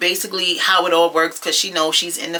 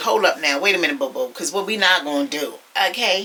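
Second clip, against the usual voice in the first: ordinary talk, nothing marked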